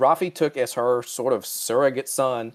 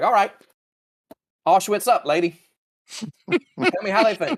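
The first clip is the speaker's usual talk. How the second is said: cynical, half-joking, pitched-up mocking tone; 8 semitones higher, 4 dB louder than usual. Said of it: "she'd be like".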